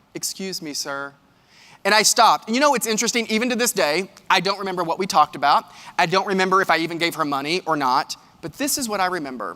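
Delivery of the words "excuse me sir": very quiet, calm, hushed and unraised, polite. Retelling her third call, never raised: imitating a calm, unraised voice. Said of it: "never raised her voice".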